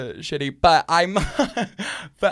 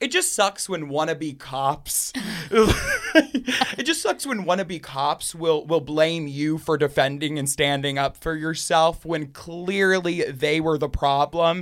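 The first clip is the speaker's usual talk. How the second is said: ordinary talk, nothing marked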